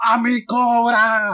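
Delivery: put-on, very high unhinged screech, "cobra" stretched. Recalling first seeing Saint Seiya on TV, imitating Shaina's crazed shout. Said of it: "Shaina gritando ... Con voz de perra loca".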